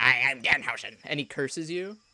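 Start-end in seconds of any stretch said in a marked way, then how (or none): 0.0-1.0 loud, sweetly sinister, nice-but-evil wrestler announcer voice. Describing a wrestler who signed the belt: Danhausen voice. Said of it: "And he sounds like this".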